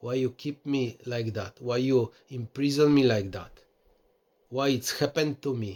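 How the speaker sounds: ordinary delivery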